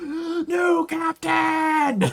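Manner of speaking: thrilled, very high, loud excited shriek. Voicing a character who screams at a fight: excited scream. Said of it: "she just screams".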